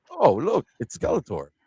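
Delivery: goofy, silly voice. Showing how the original Evil-Lyn would act: goofy Evil-Lyn voice. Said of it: "she'd be all goofy".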